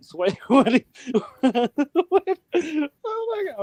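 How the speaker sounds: very high words broken by laughter. Reacting in disbelief to another speaker's story, laughing while talking. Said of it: "I don't mean to laugh".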